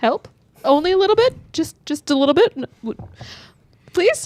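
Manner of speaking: frantic, stumbling, high, loud, panicked pleading tone. Asking a chief for help after crash landing: panicking. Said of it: "I'm panicking".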